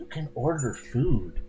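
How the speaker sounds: hushed, barely voiced whisper. Narrator voicing Throm at the table with the waiter: whispering. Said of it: "Throm whispers".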